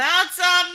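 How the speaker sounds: high, slow holler. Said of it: "she'll holler down the hallway".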